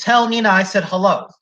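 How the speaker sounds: plain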